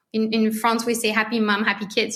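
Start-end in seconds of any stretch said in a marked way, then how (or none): none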